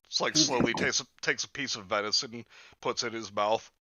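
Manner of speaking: ordinary talk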